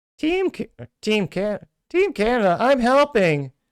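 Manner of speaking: very high, loud, swooping, sing-song bad cartoon-kid voice. Reading a listener's comment aloud, doing a Ralph from The Simpsons voice. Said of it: "I can't do his voice. Though I shall".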